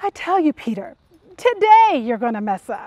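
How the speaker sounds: mock fed-up, exasperated tone. Acting out imagined words spoken to a follower, mock-exasperated. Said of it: "you can just hear the exasperation in his voice".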